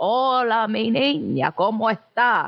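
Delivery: put-on very slow, drawn-out grandmother voice. Demonstrating the Abuela character from their sketches, very slow Abuela voice. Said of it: "The Abuela character in my sketches is very slow".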